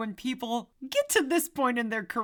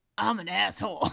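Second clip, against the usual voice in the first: put-on grumbly, grumbling voice; 3 semitones lower than usual. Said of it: "He is just kind of grumbly".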